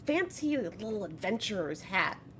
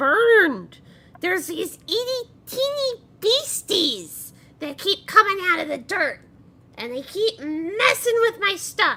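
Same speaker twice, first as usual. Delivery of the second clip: effortful, strained put-on voice, very high and loud; 12 semitones higher, 9 dB louder than usual. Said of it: "I can't do that voice for very long without hurting myself".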